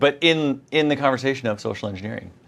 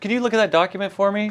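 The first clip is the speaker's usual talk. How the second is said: very high, sweet, innocent, friendly voice. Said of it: "I'm gonna come up".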